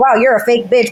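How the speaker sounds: plain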